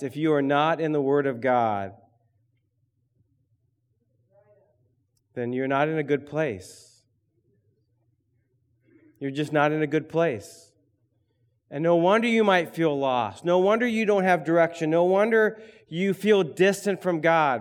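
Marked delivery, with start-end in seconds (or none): 0.0-10.7 stern, firm, severe voice. Speaking to listeners this morning as a believer in Christ, stern voice. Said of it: "I do want to say with a stern voice this morning".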